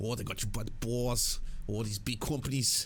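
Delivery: mock New Jersey accent. Imitating the other speaker's remark on big companies, imitating a Jersey accent. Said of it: "I don't know why the Jersey accent comes out".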